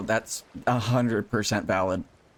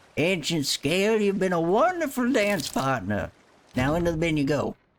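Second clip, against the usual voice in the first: put-on swooping, pitched-up old fisherman voice; 8 semitones higher than usual. Streamer showing viewers his old fisherman voice while fishing, old fisherman voice. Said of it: "my old fisherman voice".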